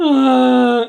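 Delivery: loud, high, long stretched-out cry of "ah". Retelling a film scene where the hero fails: imitating Thor's cry. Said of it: "He does his Thor cry".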